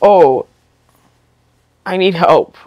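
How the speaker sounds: trembling, shaky, helpless, needy little voice. Imitating a needy person asking for help, in a mock-shaky needy voice. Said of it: "what with the shaky voice?".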